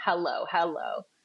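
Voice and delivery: hello rising then falling, up-down swoop each time. Explaining a study on phone dialects, demonstrating a greeting: rising then falling hello. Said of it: "And up, down".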